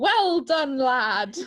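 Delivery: mocking, taunting shouted jeer. Retelling how Blackbeard taunted Maynard: imitating a taunting shout. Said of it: "Blackbeard taunts him by shouting".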